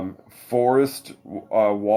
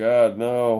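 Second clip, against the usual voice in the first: usual speaking voice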